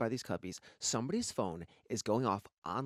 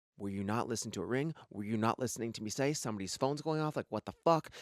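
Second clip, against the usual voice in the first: usual speaking voice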